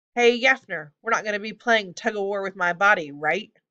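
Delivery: plain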